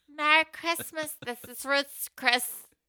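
bright, welcoming hostess tone. Joking about how the hostesses answer at Christmas, Ruth's Chris hostess impression. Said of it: "Is the hostesses at Ruth's Chris".

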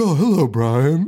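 very proper, polite, genteel, mannerly monster voice. Retelling a worm monster's first line: imitating a proper worm monster voice. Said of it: "He's, he's so proper".

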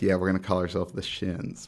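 plain

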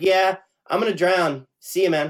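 put-on resigned tone. Describing a movie character who accepts his fate, imitating resigned acceptance. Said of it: "sort of like sits there and kind of accepts his fate".

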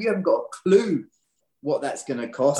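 usual speaking voice

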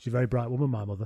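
flat, expressionless delivery. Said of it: "And he completely deadpan".

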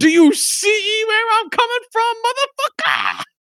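put-on high, shrill, violent, swooping shout. Retelling a movie scene where a fighter pokes eyes: imitating a movie character shouting. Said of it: "just shouts at him".

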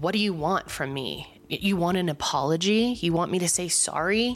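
mock-condescending tone. Retelling a woman's first words to another woman, mock-condescending. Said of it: "the way she said it is so condescending".

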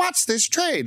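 put-on very high little-girl robotic voice. Mocking short trading videos: stupid TikTok voice. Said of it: "the stupid TikTok voice".

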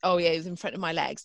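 normal talking voice

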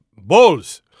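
put-on low, loud Yoruba accent. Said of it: "that's my Yoruba accent".

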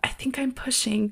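soft, hushed whisper under the breath. Retelling labor, repeating what she said to her doula: retelling a whisper. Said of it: "And I whispered to my doula".

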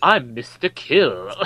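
slow, lisping tough-guy voice. Mocking a movie tough guy's one line, Mr. Kill lisp impression. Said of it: "he says it with a lisp".

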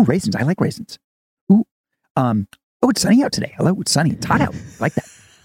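high, rapid, swooping, gushing, thrilled delivery. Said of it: "He's excited about everything".

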